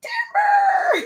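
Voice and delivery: tiny, very high beaver voice, shouted. Asked by the other speaker to do it again, the speaker performs: little beaver voice. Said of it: "they have to say it in little beaver voices".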